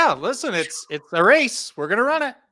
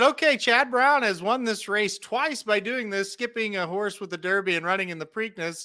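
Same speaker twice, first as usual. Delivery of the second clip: plain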